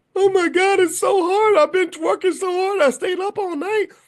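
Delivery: shrill, very high, loud, whiny sobbing. Retelling a student's complaint the day before a test: imitating a crying student. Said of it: "Stop crying to me".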